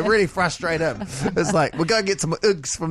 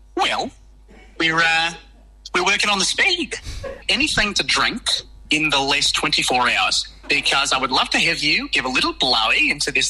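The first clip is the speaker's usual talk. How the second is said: put-on fake New Zealand accent. Playing a police officer in a roadside stop bit, put-on New Zealand accent. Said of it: "put on an amazing New Zealand accent".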